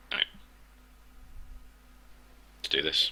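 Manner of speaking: hushed whisper. Speaker has announced whispering to keep stealth, now starting: whispering. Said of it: "anytime I'm going to talk now, I'm going to whisper".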